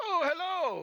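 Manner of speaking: very loud, high voice. Showing how someone should notice everybody and greet them, in a loud voice. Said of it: "in a loud voice".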